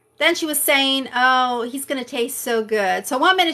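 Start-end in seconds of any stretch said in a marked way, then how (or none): 1.2-3.1 mock laughter while talking, slower. Speaker retells what she said about sending her friend to slaughter; imitating her laughing while talking. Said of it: "she's like laughing about the fact".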